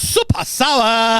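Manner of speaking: put-on Japanese accent, very high-pitched. Teasing the other speaker by mimicking them: imitating a put-on Japanese accent. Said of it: "you go".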